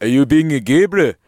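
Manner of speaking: put-on accent of Johannesburg. Acting out a scene set in 1930s Johannesburg, in a Johannesburg accent. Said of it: "That's Johannesburg".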